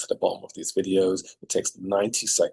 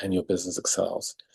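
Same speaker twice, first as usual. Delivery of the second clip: ordinary delivery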